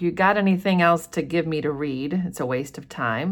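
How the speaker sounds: usual speaking voice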